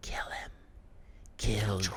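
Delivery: put-on whisper. Retelling what a shade in front of him whispered: imitating a whisper. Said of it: "it's, like, whispering to me".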